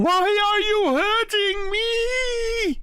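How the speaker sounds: very high crying wail, "me" drawn out. Voicing a skull struck by a radiant dagger: crying out. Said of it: "you hear this voice cry out".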